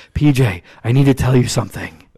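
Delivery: mock too-loud whisper. Retelling how a man spoke when he tried to whisper: imitating someone who can't whisper. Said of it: "he couldn't whisper".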